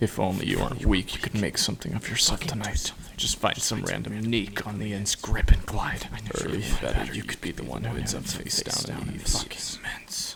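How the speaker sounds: hateful whisper full of dread. Narrator voicing the taunting voice in her head: a voice of dread and hatred. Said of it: "said the voice in her head, a voice of pure dread and hatred that knew exactly how to stoke her flame. / a voice of pure dread and hatred that knew exactly how to stoke her flame".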